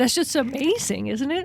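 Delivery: choked-up, emotional voice catching. Speaking about someone who is a beacon to many, speaker gets choked up. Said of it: "I'm getting a little choked up here".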